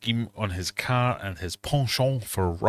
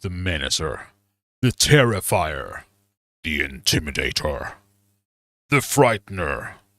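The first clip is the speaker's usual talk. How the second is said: low, sinister, threatening announcer voice; 5 semitones lower, 4 dB louder than usual. Repeating a list of nicknames, this time in a menacing voice. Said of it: "I feel like I could say them in more menacing voices".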